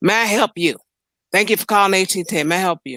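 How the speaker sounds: mock nasty, rude voice. Talking about customer service calls, imitating a nasty phone voice. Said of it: "a person that's nasty on the phone".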